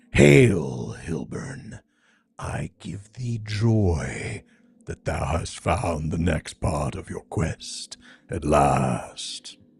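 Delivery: deep, solemn dragon voice, "joy" drawn out. Reading a game's dialogue aloud while playing, greeting Hilburn in a dragon voice. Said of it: "where's my dragon voice?".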